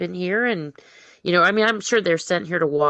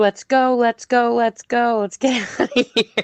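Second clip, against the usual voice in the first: mock, frantic, high, urgent screaming; 5 semitones higher, 3 dB louder than usual. Imagining being in the car, pretend screaming. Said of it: "I would be too".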